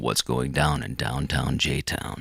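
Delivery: mock radio announcer delivery. A host reminds a guest of his old outro, in a Casey Kasem radio voice. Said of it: "give us the outro with your radio voice".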